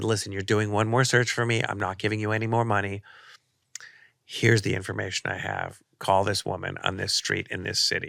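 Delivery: ordinary delivery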